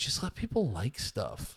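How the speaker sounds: low, soft mocking voice.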